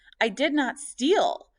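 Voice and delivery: voice full of venom. Reading a story aloud, an accused woman denying theft: voice filled with venom. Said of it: "Shanaz's voice was filled with venom".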